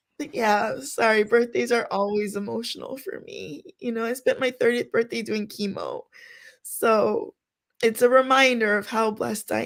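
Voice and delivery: words coming through tears, crying while talking. Speaker explains why birthdays are emotional for her, crying while talking. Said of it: "I am crying".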